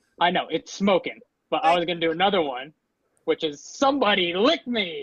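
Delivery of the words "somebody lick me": high, swooping, comic delivery thrown out with gusto. Giving a line from the film after being asked for an impression: The Mask impression, with gusto. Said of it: "in your best impression".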